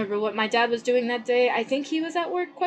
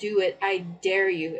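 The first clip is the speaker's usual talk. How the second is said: put-on menacing voice, low, slow, most sinister; 5 semitones lower than usual. A speaker recounts their mom facing down a gunman, mimicking a sinister voice. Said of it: "in the most sinister voice ever".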